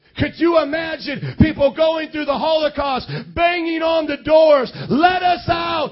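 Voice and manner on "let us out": frantic, panicked, desperate top-of-the-lungs scream. Describing Holocaust victims banging on the doors, the speaker imitates desperate screaming. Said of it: "screaming at the top of their lungs".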